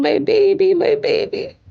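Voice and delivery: mock screaming voice. Retelling finding her daughter after the door was kicked down: retelling a scream. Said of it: "I start screaming".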